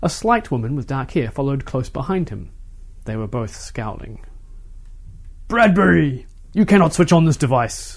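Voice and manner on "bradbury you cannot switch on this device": loud, roaring bellow. A powerfully built man reaches the front of the crowd, addressing Bradbury; bellowing. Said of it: "the man bellowed".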